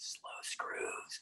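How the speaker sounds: very quiet, soft, breathy whisper. Retelling a film scene, saying a line to the helmsman: imitating a whisper. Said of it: "and I whisper to him".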